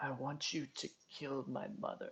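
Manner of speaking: hoarse, barely a whisper. Voicing a character to players who step up close: hoarse, barely a whisper. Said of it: "his already hoarse voice is now just barely a whisper".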